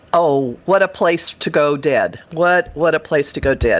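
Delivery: ordinary delivery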